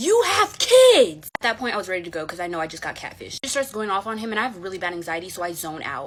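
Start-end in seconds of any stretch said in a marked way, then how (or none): 0.0-1.3 shrill, very high, very loud screaming. Retelling how the wife screamed at the married man: imitating a woman screaming. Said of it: "She looks at him and screams".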